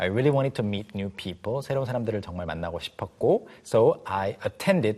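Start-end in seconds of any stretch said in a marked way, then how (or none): 3.6-5.0 very slow, careful, teacher-like reading. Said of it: "teacher modeling slowly".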